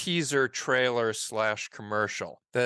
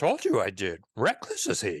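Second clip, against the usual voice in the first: not-very-good low creature voice with swinging pitch; 4 semitones lower than usual. Speaker quotes a line they put in a script, doing a bad Yoda impression. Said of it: "I can try and do a little Yoda".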